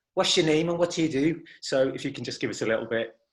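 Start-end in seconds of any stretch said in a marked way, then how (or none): 0.2-1.4 high-pitched presenter voice with Liverpool accent.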